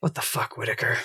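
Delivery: hushed, breathy, whispered grumble under the breath. Voicing Theo under his breath in a silent tent: muttering in character. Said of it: "he just mutters".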